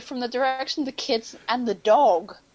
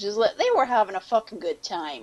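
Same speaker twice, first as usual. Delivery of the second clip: usual speaking voice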